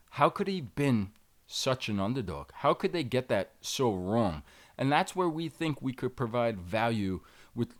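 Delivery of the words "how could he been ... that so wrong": usual speaking voice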